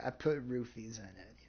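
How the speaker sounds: slow, dripping, heavily sarcastic delivery. Retelling a reply to a girl who asked about her drink: retelling a sarcastic remark. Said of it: "with the most, like, sarcastic tone I could come up with".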